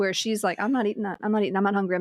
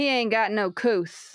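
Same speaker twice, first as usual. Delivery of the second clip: put-on slow drawl of old high-society Southern lady. Explaining a high-society southern word, imitating a southern lady. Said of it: "When the Southern lady goes".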